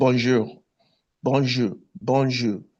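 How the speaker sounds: heavily stressed French pronunciation. Coaching listeners on pronunciation, demonstrating a strongly stressed French accent. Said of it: "Try and stress the accent when you speak it".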